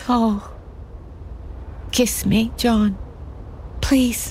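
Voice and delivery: tearful, crying, begging voice. In a love scene, one lover asks john for a kiss, crying. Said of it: "You're crying".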